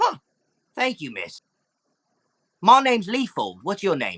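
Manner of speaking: high, swooping fantasy goblin character voice. Voicing a freed goblin who thanks the rescuer: goblin voice. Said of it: "The goblin comes up".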